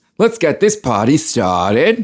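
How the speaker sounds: slow, drawn-out, drawling cartoon cat voice. Quoting a famous movie line: Mike Myers Cat in the Hat voice. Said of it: "the world knows what Mike Myers' Cat in the Hat is".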